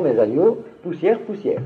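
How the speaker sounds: ordinary delivery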